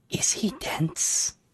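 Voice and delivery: loud put-on stage whisper, close to the ear. Voicing a character who leans to a player's ear: stage whisper. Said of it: "gets really close to your ear like she's trying to whisper".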